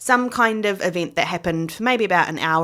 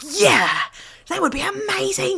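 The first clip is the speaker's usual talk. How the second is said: put-on high, thrilled, excited, pitched-up childlike voice. Retelling how the kids answered their mum's dinner offer: imitating their excited younger selves. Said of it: "We got so excited".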